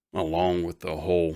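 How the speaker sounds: plain reading voice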